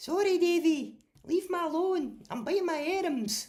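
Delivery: put-on very high, loud, broad Glasgow accent. Showing off an impression of Amanda talking to Davy while buying items. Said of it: "I can do a good impression of Amanda".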